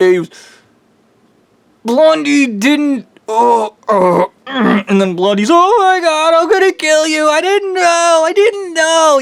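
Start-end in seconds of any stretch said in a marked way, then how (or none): 7.3-9.2 acted crying through the words, high and blubbering. Retelling a man coming into Papa John's, imitating someone crying. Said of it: "crying like a bitch".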